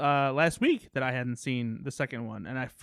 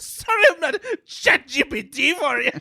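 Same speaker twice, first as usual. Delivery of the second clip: put-on very high-pitched, loud, drunken Scottish accent; 13 semitones higher, 8 dB louder than usual. Declining to be a chatbot for the group, in a Scottish drunk uncle voice. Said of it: "Was that Scottish drunk uncle".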